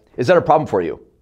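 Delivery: hard, sharp downward drop at the end, on you. Showing how a question sounds with sharper downward tonality: sharp falling pitch at end. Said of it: "Saying it like that with a sharper downward tonality".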